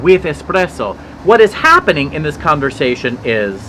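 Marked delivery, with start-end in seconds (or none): 0.0-1.0 high, amateurish attempted Italian accent. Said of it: "can't really do an Italian accent".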